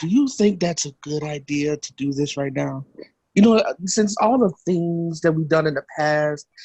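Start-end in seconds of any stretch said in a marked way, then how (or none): 0.0-2.9 whisper, lower. Whispering a doubt to another character in the game: whispering in character. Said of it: "I'm whispering to him like".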